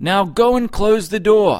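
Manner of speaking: high, loud, victorious, triumphant shouted yell. The husband, clapping his hands after declaring he won, yelling. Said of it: "yelled the husband, clapping his hands".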